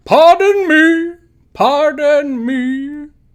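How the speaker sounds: high-pitched, booming, very loud voice. Narrator voices an unseen stranger calling out to everyone aboard the ship, booming voice. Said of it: "hear a booming voice say".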